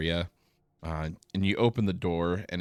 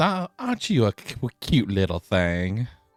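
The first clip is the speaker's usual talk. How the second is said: swooping sing-song voice rising and falling; 4 semitones higher, 5 dB louder than usual. Voicing Traga the receptionist thanking a player: Traga voice. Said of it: "She, uh, thanks you and says".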